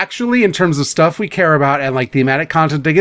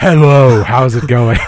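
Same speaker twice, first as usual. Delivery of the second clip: play-acted loud, drawn-out booming delivery; 4 semitones lower, 5 dB louder than usual. Mocking another speaker's loud entrance: loud imitation of Jackson. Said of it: "I don't sound like that".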